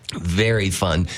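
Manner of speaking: plain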